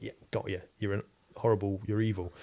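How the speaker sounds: ordinary talk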